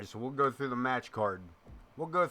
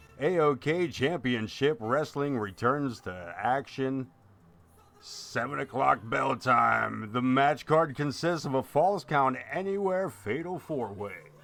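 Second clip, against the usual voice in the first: loud, hyped-up on-air radio announcer voice; 6 dB louder than usual. Announcing a wrestling event, in a put-on radio announcer voice. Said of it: "with the radio voice".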